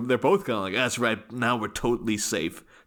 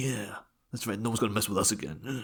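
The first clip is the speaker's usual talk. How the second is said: macho, tough-guy bravado; 6 dB quieter than usual. Imitating a film character boasting after a fight: imitating a tough guy. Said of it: "It's like a tough guy".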